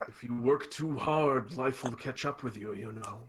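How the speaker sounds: strangely pleasant but ominous tone. A plant in the forest gives the traveler advice, strangely pleasant but ominous. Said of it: "strangely pleasant but ominously spoken".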